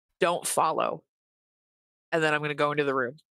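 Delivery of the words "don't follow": dead-serious, very stern delivery. Telling their character's dad not to follow: sternest, most deadpan voice. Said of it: "in like the sternest, most deadpan voice I can manage".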